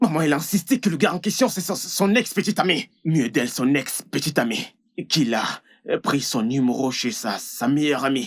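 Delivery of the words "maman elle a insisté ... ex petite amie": agitated, high-pitched anger at a rapid pace. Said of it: "Tu dois te calmer".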